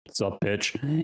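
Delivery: voice dropped as deep and low as possible. Retelling going up to her and greeting her in the deepest voice possible. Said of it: "with the deepest voice that I could".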